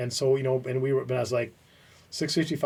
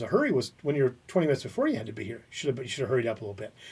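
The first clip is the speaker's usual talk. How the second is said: usual speaking voice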